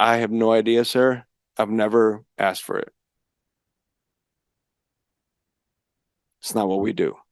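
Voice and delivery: mock weeping, words through tears. Retelling what he told his attorney in jail: imitating his own crying. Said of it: "I remember crying and saying".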